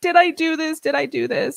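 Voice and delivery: put-on tearful, distraught, high-pitched sobbing. Speaker recalls breaking down over their child, retelling own sobbing. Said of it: "So I'm like sobbing".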